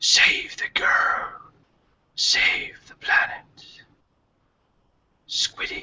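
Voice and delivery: faint, slow, drawn-out whisper. Voicing a whisper heard on the wind at a vision's end: whisper on the wind. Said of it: "you hear this, this, this, this whisper kind of on the wind".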